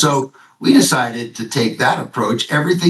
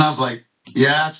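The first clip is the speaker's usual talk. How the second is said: normal talking voice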